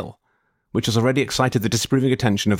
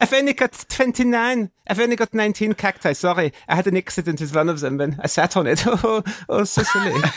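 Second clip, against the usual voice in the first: put-on German accent, pitched up; 9 semitones higher than usual. Telling a story, play the gardener who has come in, german accent. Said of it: "He's a German gardener".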